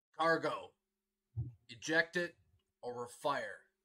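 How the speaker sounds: very gruff, very loud barking voice. Game master voicing someone over the radio from a ship in range, very gruff voice. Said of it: "a very, very gruff voice saying".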